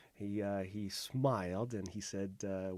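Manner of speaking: ordinary talk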